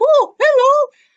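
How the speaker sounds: very high-pitched, loud, projected character voice. Retelling how the LTA gave the pool noodle a voice: Noodle Man voice. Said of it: "I'm gonna give him a voice".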